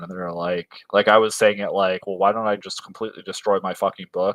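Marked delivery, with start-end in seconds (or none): 2.1-4.3 mock tone, dripping with biting sarcasm. An author recounts his reply to a suggestion about his book: retelling his own sarcastic reply. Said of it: "that was the tone I was using sarcastically".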